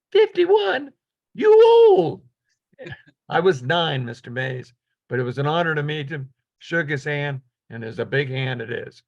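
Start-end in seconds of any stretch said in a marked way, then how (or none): 0.1-2.2 small, piping, squeaky voice, very high and loud. Retelling meeting a baseball hero in an elevator, Willie Mays's little voice. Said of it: "in his little voice".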